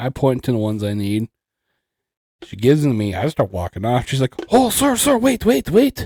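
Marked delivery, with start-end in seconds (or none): 4.5-6.1 put-on Spanish accent, raised and very high. Retelling a woman calling after them as they walked off: imitating a Spanish accent. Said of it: "you were talking like she was Spanish".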